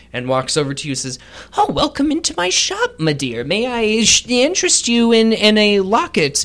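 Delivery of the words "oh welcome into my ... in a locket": high, sing-song put-on halfling voice. Voicing a halfling who walks over to greet a shop visitor, halfling shopkeeper voice. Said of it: "There's a halfling sitting on a stool".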